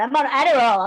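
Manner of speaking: put-on American accent. Imitating American TV programs saying a line: put-on American accent. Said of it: "I thought that was a good American accent".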